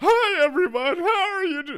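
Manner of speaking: loud, very high, projected presenter voice. Describing greeting people right after streaming, she slips into a loud stage voice. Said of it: "I still have my stage voice".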